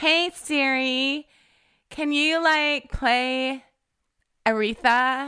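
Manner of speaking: heavy American accent, spoken very slowly. Asking Siri to play music so it understands, in a strong American accent. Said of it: "I have to change the accent to like a really strong American accent".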